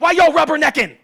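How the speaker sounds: put-on shrill, very loud, high angry screaming. Stuck in traffic for hours, re-enacting his outburst at drivers, acting out his own anger. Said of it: "then I really get hot".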